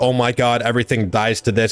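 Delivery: put-on panicked voice. Retelling a game moment while panicking: retelling own panic. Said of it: "I'm panicking".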